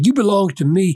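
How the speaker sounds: haughty, lordly, arrogant ruler-like delivery. Speaker acting out a governor or emperor claiming believers; mocking an arrogant ruler. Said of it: "they look arrogantly at you and say".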